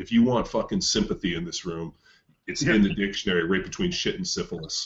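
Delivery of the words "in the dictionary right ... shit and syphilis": ordinary talk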